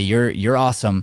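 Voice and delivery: ordinary talk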